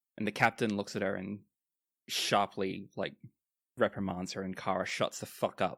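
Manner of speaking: ordinary talk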